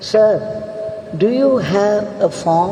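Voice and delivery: ordinary talk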